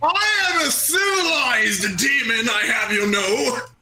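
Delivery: slow, high-pitched demon voice. Playing a demon ordering a milkshake: Blood Monarch demon voice. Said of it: "I am Blood Monarch, the Skull Demon".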